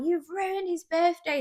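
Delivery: mock shouting, high and scolding. Retelling a customer's complaint about a ruined birthday: imitating a customer shouting. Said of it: "'cause you're shouting".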